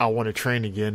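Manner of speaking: plain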